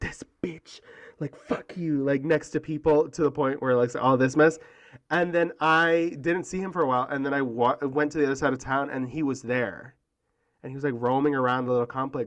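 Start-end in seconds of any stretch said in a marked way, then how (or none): 0.0-2.0 mock muttering, much quieter, slower. Speaker retelling what a man said next to people, imitating muttering under breath. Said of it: "under his breath".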